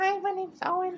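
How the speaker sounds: put-on tiny, very high little child voice. Imitate the answering machine greeting Owen still has from when he was like twelve, Owen's little voice. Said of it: "it's like a little voice like".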